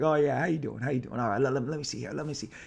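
laughing, relaxed, casual, easygoing chuckle. Retelling a first meeting where the other man greeted him: imitating a chuckling greeting. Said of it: "chuckled, like".

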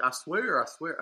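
put-on silly drawl. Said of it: "this goofy drawl".

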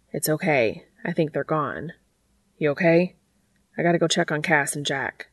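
plain reading voice

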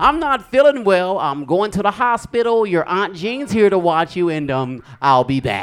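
high, loud, sweet sing-song motherly voice. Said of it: "She would say".

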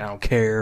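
mock snarky tone and attitude. Describing feeling crabby this episode, imitating a snarky tone. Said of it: "a little extra snarky, like, just being like".

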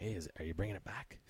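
soft, hushed half-whisper, close up. Retelling what people at work asked about the mustache: imitating a half-whisper. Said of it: "People would come in close and, like, whisper".

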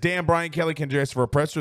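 ordinary talk, nothing marked

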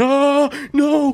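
mock very high, fearful scream of fright. Speaker retelling being attacked in a game, acting out a fearful yell. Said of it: "I think I yelled".

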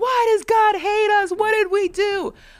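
play-acted, very high, heavy New Jersey howl. Retelling how a Giants fan screamed, in a Tony Soprano accent. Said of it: "like he was screaming at the top of his lungs".

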